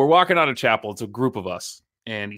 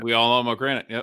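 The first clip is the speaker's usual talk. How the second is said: ordinary talk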